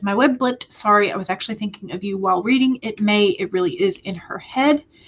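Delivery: ordinary talk, nothing marked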